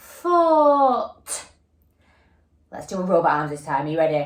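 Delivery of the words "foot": the word foot drawn out long, high, sounded out. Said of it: "And again".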